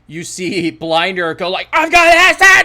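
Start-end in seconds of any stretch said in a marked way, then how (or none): 1.7-2.6 wild, very loud, very high shrieking scream. Narrating a scene where Blinder threatens the dudes on the stairs, screaming a threat. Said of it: "And he like screams".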